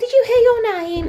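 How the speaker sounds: very high, goofy, silly dog voice. Talking to the dog, Lucy; stupid dog voice. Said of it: "That's my stupid dog voice".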